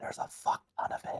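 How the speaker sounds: whispering voice. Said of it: "I'm gonna go ahead and whisper to the party members".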